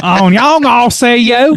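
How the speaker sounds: fake accent with some Baltimore. Trying a joke French phrase: put-on French accent with Baltimore tinge. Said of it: "That was like a dash of Baltimore in there".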